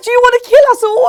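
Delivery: full-on scream, shrill, very high and very loud. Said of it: "She screamed".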